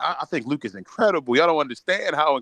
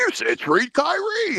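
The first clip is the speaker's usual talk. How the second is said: very high, very slow mocking troll voice. Reading out what trolls write online, in a mocking troll voice. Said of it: "it's like the troll voice".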